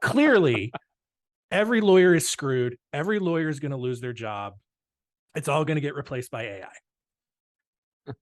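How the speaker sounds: thick, heavy, laid-on sarcasm throughout. Raising a hot topic before wrapping up: heavy sarcasm. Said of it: "I cannot put any more sarcasm on this".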